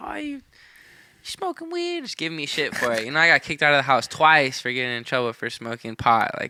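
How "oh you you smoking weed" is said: put-on soft, hushed, very high old-lady voice. Retelling grandma scolding them about smoking weed, speaker uses a grandma voice. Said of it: "That's just like my grandma voice".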